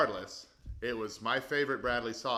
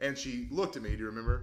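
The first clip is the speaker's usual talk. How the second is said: ordinary delivery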